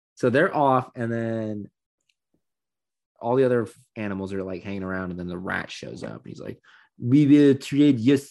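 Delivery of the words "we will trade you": very loud, drawn-out, bad fake French accent. Retelling a story, the speaker voices the rat in a bad French accent. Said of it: "I'm going to do a bad French accent".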